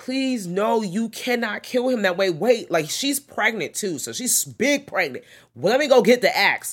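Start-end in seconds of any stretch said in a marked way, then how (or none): 0.0-2.2 put-on sobbing, tearful, begging, crying voice. Retelling how the pregnant wife begged, imitating a woman crying. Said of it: "the wife is crying like".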